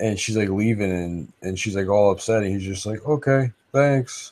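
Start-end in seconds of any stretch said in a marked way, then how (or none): 3.1-4.3 acted dazed, spaced-out, pitched-up delivery. Retelling how Bran answers someone leaving upset: imitating Bran sounding out of it. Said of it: "super, super, like, you know, like, out of it".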